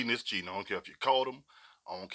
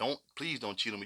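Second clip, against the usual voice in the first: put-on begging and pleading; 4 dB quieter than usual. Retelling a partner's words: imitating someone begging and pleading. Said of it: "She can beg and plead".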